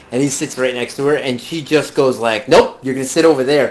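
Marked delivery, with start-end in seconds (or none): 2.4-3.7 imitated, mock-stern voice. Retelling how a woman made a man sit elsewhere, imitating a stern voice. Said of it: "says it in this stern voice".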